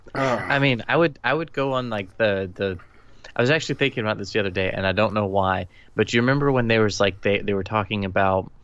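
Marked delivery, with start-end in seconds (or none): none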